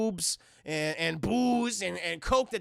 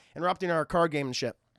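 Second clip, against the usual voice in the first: ordinary talk, nothing marked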